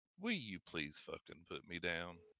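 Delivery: casual, breezy, swooping, matter-of-fact delivery. A woman carried over someone's shoulder suddenly stops screaming; nonchalant, matter-of-fact. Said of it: "rather nonchalantly and matter of factly".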